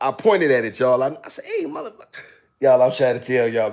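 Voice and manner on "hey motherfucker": very high, put-on stand-up comic voice. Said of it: "I think my voice is like Richard Pryor".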